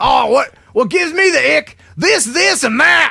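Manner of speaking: shouting with Tennessee accent. Showing a co-host how to read out the words sent, yelling in Tennessee accent. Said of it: "You got to read it like this, like he's yelling out".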